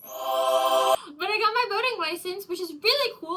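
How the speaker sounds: very high, thrilled shriek, swooping wildly. Telling a story of recent personal milestones, excited screaming. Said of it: "Sorry for screaming".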